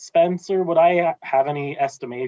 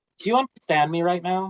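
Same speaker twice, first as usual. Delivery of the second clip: very gentle voice, pitched up; 6 semitones higher than usual. Speaking as Lark, a player asks a man in Sylvan: very gentle. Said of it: "very gently".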